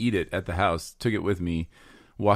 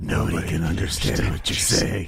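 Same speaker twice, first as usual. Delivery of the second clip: rough, gritty whisper. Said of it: "she turns into Batman?".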